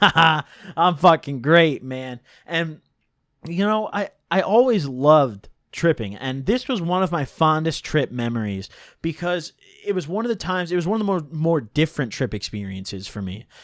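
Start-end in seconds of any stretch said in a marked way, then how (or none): 0.0-2.2 put-on giggly voice, louder. Retelling own answer to being asked how he feels: imitating own giggling reply. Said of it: "I just kinda giggle".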